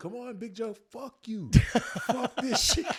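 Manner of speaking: very loud, very high-pitched scream. Retelling cussing during cardio in practice: retelling his own screaming. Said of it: "I'm screaming all the way".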